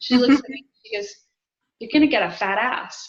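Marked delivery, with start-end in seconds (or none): 1.8-3.1 put-on friendly, good-natured teasing tone. Speaker retells an older woman's remark while getting coffee, imitating a big-smile tease. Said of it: "said it with the biggest smile ever".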